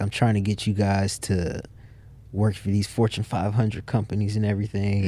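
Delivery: plain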